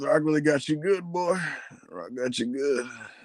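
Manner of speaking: put-on acted gruff Southern old man voice. Imitating The Rock's strange recent promo voice again: The Rock as grizzled Southern old man. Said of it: "like a grizzled Southern old man".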